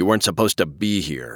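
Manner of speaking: rough and gruff. A man to a woman he has just pulled to the woods' edge, gruff. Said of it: "he said gruffly".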